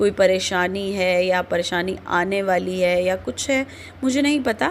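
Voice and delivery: ordinary talk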